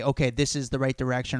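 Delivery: ordinary delivery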